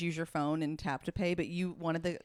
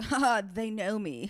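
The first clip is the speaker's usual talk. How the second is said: mock grand, stagey, very slow, drawn-out theatrical delivery; 4 semitones higher, 4 dB louder than usual. Imitating how the other speaker acts when giving a phone number: imitating a theatrical delivery. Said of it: "much more, like, theatrical".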